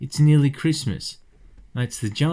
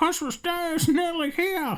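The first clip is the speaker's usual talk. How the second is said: put-on, very high, soft, charming dog voice; 6 dB quieter than usual. Speaker reading a comic panel aloud, voicing the dog: charming dog voice. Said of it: "That's my dog voice. That's my charming dog voice".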